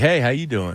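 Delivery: put-on slick, smooth player voice. Retelling a guy who came in while they were finishing up, slick voice. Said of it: "come in with a real slick voice".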